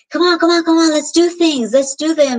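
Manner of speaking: put-on impatient, pushy voice. Speaker retelling how she used to push him to act, retelling pushy urging. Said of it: "why are you pressuring me?".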